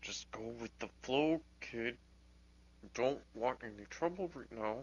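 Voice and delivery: quiet, hushed half-whisper. Playing a character in a game, speaking to the kid, half-whispering. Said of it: "whisper to the kid".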